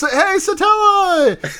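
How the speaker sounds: put-on, very high, full-throated shout. Recapping an episode where a character calls out to someone: imitating a shout. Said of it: "and he shouts".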